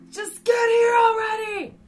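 loud yelling.

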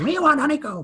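very high-pitched, frenzied maniac yelling. Imitating kids in class turning into the mascot: yelling like the Honeycomb mascot. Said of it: "turn into this maniac".

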